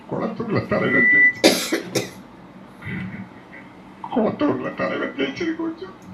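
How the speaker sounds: high, slow, choked tearful crying.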